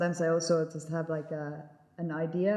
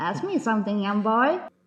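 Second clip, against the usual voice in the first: put-on loud, elderly old granny voice; 4 semitones higher, 7 dB louder than usual. Asked to speak like the granny, the performer answers in an old granny voice. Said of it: "would you like me to speak like the granny".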